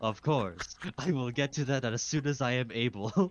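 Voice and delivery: mock seventeenth-century aristocrat voice. Retelling a reply at work as a seventeenth century aristocrat. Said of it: "I'm some fucking, like, seventeenth century aristocrat".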